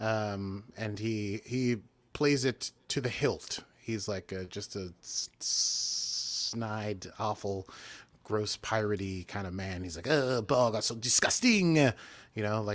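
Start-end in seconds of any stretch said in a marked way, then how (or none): 10.1-11.8 bad, put-on French accent. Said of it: "his accent's better than that, but not much".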